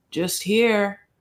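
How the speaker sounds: mock monotone, flat and toneless speech. Retelling a phone call, imitating a monotone reply. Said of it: "their conversation is always so monotone".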